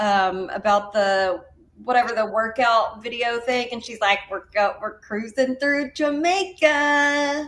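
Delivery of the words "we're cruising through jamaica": put-on thick country accent, higher pitch, slower pace. Telling a friend about a workout-video commercial, Brittany's country accent. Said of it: "her countryest country accent".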